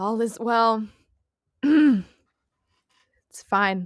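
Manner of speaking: very strained words pushed out under pressure. Player voicing a squished character answering someone at the door: very strained voice. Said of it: "they would hear a very strained voice saying".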